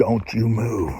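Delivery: play-acted harsh, stern, no-nonsense voice. Dog owner showing how they command their dog to stay put; harsh voice. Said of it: "give him a, a harsh voice".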